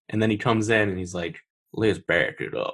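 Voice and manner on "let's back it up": put-on slow, weird American accent. Describing an actor's line in a movie, in a weird American accent. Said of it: "he likes doing weird American accents".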